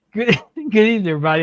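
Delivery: breaking into laughter. Opening the show while someone in the back is joking: laughing while talking. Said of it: "I'm sorry, I'm laughing".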